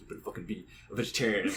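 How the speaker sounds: whispered, breathy, leaned-in and insistent. Retelling how an uncle pushed vegetarianism: imitating uncle leaning in hard. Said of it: "really leaned in and was like".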